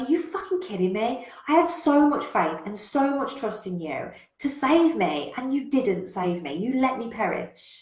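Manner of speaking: pissed-off, outraged, indignant angry rant. Telling a joke, voicing a drowned man complaining to God, acting out an angry rant. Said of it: "he's pissed".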